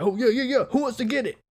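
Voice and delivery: very high, hyper little-dog yapping voice. Retelling a man hopping around like a yappy little dog, imitating a yappy guy. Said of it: "hopping around like a yappy little dog".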